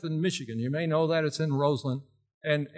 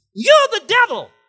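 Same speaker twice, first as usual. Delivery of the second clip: put-on shrill whine, very high and very loud, like a child; 14 dB louder than usual. Retelling a church outreach visit, Baptist preacher is imitating a high whiny voice. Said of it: "He had this real high, whiny type voice".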